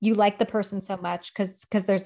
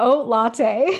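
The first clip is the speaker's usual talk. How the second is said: loud, laughing through the words; 4 semitones higher, 7 dB louder than usual. Announcing a friend's code name and trying to say it: laughing while speaking. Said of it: "I literally can't even say it without laughing".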